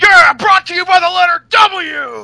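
very high, belted promo-style call, stretched W. Retelling a commentator's line: sounding like Paul Heyman. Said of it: "You sounded so much like Paul Heyman".

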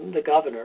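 ordinary delivery

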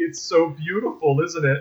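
ordinary talk

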